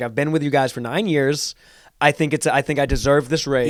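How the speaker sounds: ordinary talk, nothing marked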